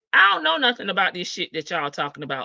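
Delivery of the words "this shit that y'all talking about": ordinary talk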